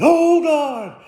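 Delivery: loud, fervent cry, pitched very high. Talking about prayer, the speaker demonstrates crying out to god: loud vociferous prayer. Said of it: "Sometimes we pray vociferously".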